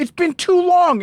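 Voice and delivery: put-on yelling. Retelling how the older women greet you at the store: imitating someone yelling. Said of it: "why are you yelling at me".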